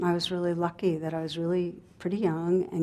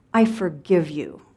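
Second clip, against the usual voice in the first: put-on spiteful toddler voice, louder and slower; 5 dB louder than usual. A mother retelling her crying three-year-old's words, imitating a toddler's venomous voice. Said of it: "with the venom in her tiny voice".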